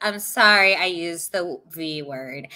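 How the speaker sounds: low, slow, grudging, fake sorry-sounding tone. Retelling how she apologized, mock insincere apology. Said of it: "the most insincere apology".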